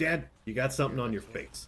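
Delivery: ordinary talk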